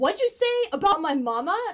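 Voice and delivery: very loud, shocked, stunned disbelief. Coaching a line reading, showing an alternate version that sounds shocked. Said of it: "I'm just shocked they even said that".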